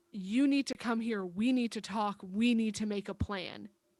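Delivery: commanding, demanding, queenly tone. Reaching out to another character, giving orders: demanding tone like a former queen. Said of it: "in a demanding kind of tone of when, like, I used to be queen".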